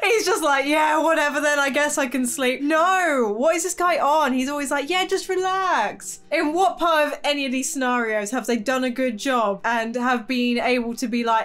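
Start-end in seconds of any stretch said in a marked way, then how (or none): none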